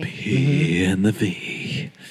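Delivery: creepy low voice. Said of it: "I was trying to be creepy".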